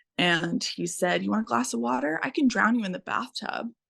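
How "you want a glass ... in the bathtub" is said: tossed-off sarcastic tone. Retelling his reply when the son asked for water: imitating a sarcastic remark. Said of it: "just as, like, a sarcastic remark".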